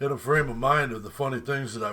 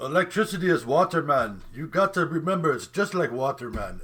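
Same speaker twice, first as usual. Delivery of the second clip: poorly faked Caribbean accent; 4 semitones higher than usual. Retelling a guy from Trinidad teaching a class, horrible Rastafarian accent. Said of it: "I'm doing the accent horribly".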